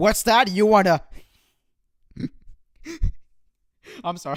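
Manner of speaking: words breaking into laughter. Reading an article aloud and reacting to a line, laughing while talking. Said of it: "I'm actually laughing".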